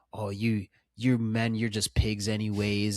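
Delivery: sour, resentful, bitter, angry outburst. Retelling how a character talks to the men: imitating a bitter, angry character. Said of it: "bitter and angry when she's talking".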